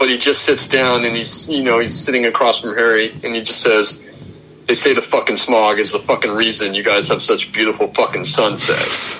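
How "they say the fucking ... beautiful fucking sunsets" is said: flat, deadpan voice, put on. Recounting a favorite movie line, quoting him across from Harry, retelling a deadpan line. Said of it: "He's completely deadpan".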